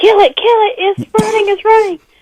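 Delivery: shrill, very high-pitched scream. Recalling screaming as a possum ran out of its hole, retelling a scream. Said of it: "and I was screaming".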